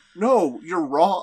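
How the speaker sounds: very loud, patronising, condescending tone. Retelling a cartoon character correcting a kidnapper: imitating a condescending tone. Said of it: "this very condescending".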